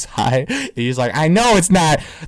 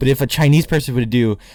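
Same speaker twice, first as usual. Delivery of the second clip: normal talking voice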